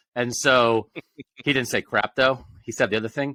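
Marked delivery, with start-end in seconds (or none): none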